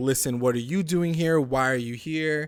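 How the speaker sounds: put-on yelling. Retelling how a character yells at another: imitating someone yelling. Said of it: "she kind of, like, yells at him".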